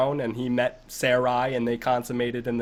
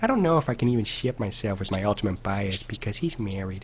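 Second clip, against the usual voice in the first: put-on cartoon dad voice, lower; 3 semitones lower than usual. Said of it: "It's like a Peter Griffin".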